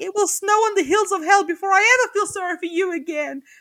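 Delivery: fierce, furious, loud and high-pitched. Retelling how she ends a confrontation over cheating: mock-angry declaration. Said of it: "Susan gets angry".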